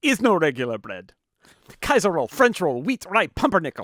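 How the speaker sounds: loud put-on Hungarian accent. Retelling what the man taking sandwich orders told a customer: hungarian accent. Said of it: "in his Hungarian accent".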